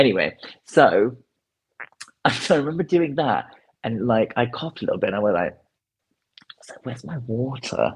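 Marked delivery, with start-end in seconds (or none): 6.8-7.9 mock mutter under breath, quieter and slower. Speaker recounting what he said after coughing, retelling a mutter under breath. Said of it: "like under my breath".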